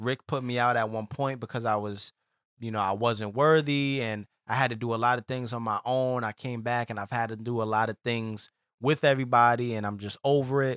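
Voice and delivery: normal talking voice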